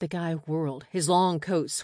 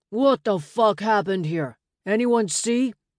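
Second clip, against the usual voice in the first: high, loud, demanding bellow; 5 semitones higher, 6 dB louder than usual. A man stares at the bodies on the sidewalk and bellows his question: bellowing. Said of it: "he bellowed".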